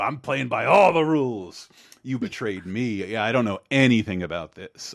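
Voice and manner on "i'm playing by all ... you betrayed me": hard-nosed, tough put-on cop voice. Imitating how a cartoon character talks to a woman: hard-nosed cop voice. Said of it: "the hard-nosed cop".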